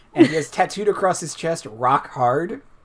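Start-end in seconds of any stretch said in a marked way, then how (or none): none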